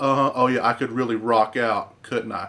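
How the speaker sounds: heavily sarcastic, mocking tone. Retelling a celebrity's reply to a suggestion: imitating a sarcastic reply.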